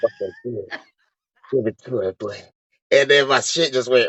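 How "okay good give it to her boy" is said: put-on whispering. Retelling a stranger at a resort leaning in: imitating someone whispering. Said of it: "this dude is just whispering".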